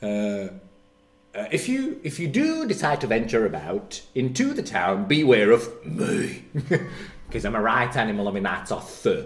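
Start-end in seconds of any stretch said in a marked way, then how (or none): 1.5-9.3 animated, swooping holiday-rep patter. Retelling a stand-up bit about a holiday rep on the bus: imitating Lee Evans as holiday rep. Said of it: "he goes".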